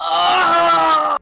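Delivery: put-on loud moan. Describing a hypothetical flight boarding, acting out a loud moan. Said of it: "I would moan loudly".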